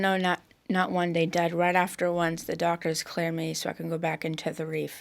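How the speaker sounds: usual speaking voice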